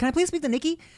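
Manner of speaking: put-on sweet, polite, innocent voice. Retelling phone calls asking to speak to Nikki, in mock-innocent voice. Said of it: "as innocent as possible".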